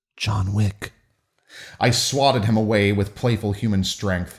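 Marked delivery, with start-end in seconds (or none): 0.1-0.9 whispering. Reading a story aloud, a character leans close: whispering in someone's ear. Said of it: "to whisper in my ear".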